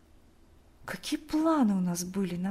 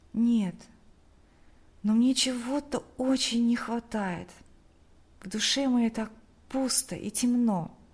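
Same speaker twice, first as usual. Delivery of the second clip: plain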